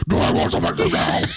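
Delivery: low, pushy, anything-but-calm insistent tone. Acting out how a pregnant woman asks for ice cream, imitating a not-calm demand. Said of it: "they don't ask for it in that calm a voice".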